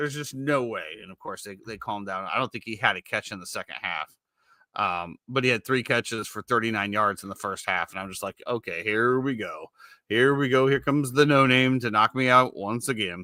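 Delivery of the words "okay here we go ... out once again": slow, glum, gloomy, hangdog moping. Retelling the speaker's reaction to an opposing receiver's catches, mock-gloomy Eeyore voice. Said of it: "You sounded like Eeyore right there".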